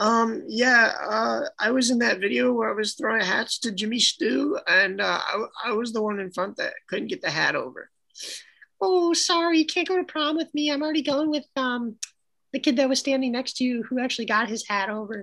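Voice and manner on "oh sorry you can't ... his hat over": high, put-on girly voice. Voicing a girl turning down a prom invitation, in a girl voice. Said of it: "how do you like my girl voice".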